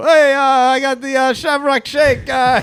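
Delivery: slow, high-pitched drawl, hesitating. Doing an impression of Sheamus trash-talking, as another speaker asked: Sheamus impression. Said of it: "Sheamus will come up and he'll go".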